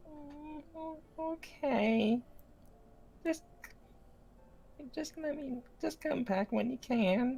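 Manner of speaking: put-on high, loud baby dragon voice.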